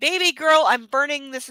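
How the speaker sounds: plain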